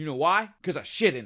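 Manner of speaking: imitated pissed-off, angry voice. Retelling a scene where the wife answers the sheriff: imitating someone pissed off. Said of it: "pissed off as all get out".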